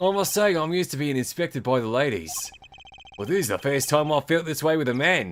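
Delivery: put-on Australian accent. Voicing a game character while playing through it, in a put-on Australian accent. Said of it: "I should give this guy an Australian accent".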